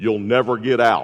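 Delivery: low, deep voice. Telling a joke about a man stuck in a grave, a voice answers in a deep voice. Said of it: "he heard a deep voice".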